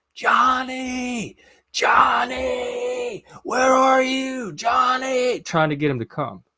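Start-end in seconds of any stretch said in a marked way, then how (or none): 0.2-5.4 very high, very slow, drawn-out, lung-bursting screams. Retelling calling for Johnny in a motel parking lot: retelling screaming at top of lungs. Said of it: "I start screaming at the top of my lungs".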